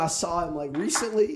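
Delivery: ordinary talk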